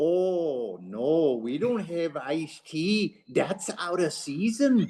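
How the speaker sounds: put-on Hales Corners accent. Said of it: "I do recognize the Hales Corners accent".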